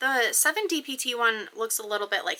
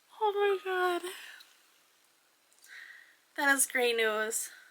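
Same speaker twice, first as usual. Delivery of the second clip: soft, teary, moved voice; 7 semitones higher, 7 dB quieter than usual. Reading her pregnancy test results, tearing up. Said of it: "I'm tearing up".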